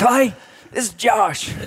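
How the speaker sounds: squeaky, very high voice with unhurried, drawn-out delivery. Retelling a phone call, doing a Josh impression. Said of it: "That's pretty good".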